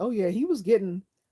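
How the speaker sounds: high, loud, excited gushing. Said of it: "I was like".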